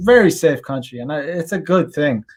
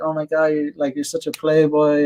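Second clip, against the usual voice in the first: put-on flirtatious, teasing tone. Retelling what others said to the speaker: imitating flirtatious teasing. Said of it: "in a flirtatious, like, manner".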